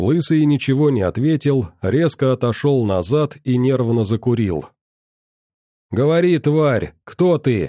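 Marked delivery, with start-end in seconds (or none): 5.9-7.7 harsh, fierce yelled shout. A bald man interrogates a bloodied captive, shouted. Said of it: "крикнул он".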